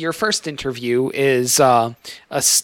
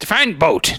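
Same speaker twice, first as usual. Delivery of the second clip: put-on pirate accent, like a ship's pirate; 3 semitones higher than usual. Voicing a candidate who is asked about boats: pirate accent. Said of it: "they all sound like pirates".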